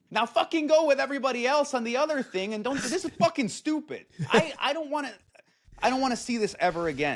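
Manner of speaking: ranting yell pitched way up. Ranting about a rebranded name, yelling. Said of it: "so you don't have to yell".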